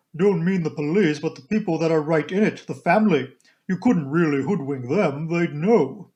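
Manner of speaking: deep, almost manly, booming, stentorian voice. Narrating a story, voicing a woman replying to the narrator: deep, almost manly stentorian voice. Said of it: "She was a pleasant-looking woman of about 40, with a deep voice almost manly in its stentorian tones, and had a large, sensible, square body with feet to match, these last encased in good thick boots".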